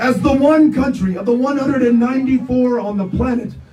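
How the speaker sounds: plain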